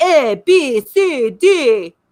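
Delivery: put-on drawn-out nasal mid-Atlantic accent with Transylvanian tinge. Describing a man's weird way of talking in a movie, in a nasal pseudo-Transylvanian mid-Atlantic accent. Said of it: "I think they called it pseudo-Transylvanian mid-Atlantic".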